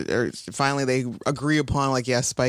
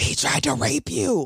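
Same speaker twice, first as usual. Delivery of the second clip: very loud stage whisper pushed to carry; 4 semitones higher than usual. Retelling Xander warning the heroine about Spike: imitating Xander's loud whisper. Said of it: "with a very loud whisper".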